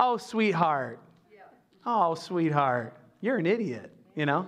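mock Southern accent, put-on. Comparing how people talk in different regions, imitating a Southerner. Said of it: "In the South".

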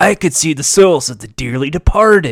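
surfer-dude voice. Voicing a dub character as a joke: surfer-dude voice. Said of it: "Why is he a surfer?".

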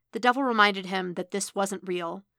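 ordinary delivery

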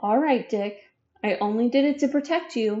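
ordinary delivery

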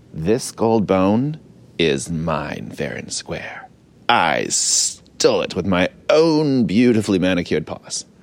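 evil, villainous voice. Voicing a villain character in a told story, evil villain voice. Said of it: "what was I saying in my evil villain voice?".

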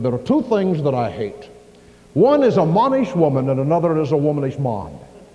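loud, sort of British brogue. Quoting what a man of God, Dobbins, once said, in a British brogue. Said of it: "he was sort of a British brogue".

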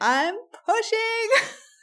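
sudden yell, pitched way up high. Retelling a birth when the pushing began suddenly: retelling a yell. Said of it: "I just yelled".

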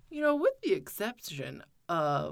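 put-on pretentious voice, full of airs and graces. Retelling how he phrased a question, in his best put-on pretentious voice. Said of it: "let me put on my best pretentious voice".

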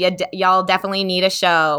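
ordinary talk

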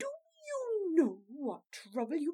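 rage breaking through, voice climbing and swooping. A princess confronts a man who has turned up; low, raging, rising voice. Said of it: "She checked her rising voice".

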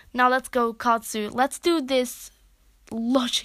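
ordinary delivery

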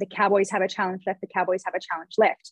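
ordinary talk

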